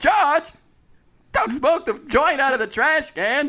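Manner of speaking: goes way up in pitch, loud and terrible-sounding. Doing a bit about George, the speaker performs the worst Jerry Seinfeld impression ever. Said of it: "This is the worst Seinfeld anyone has ever done".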